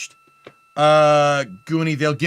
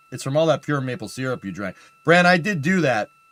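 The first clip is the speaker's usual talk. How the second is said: plain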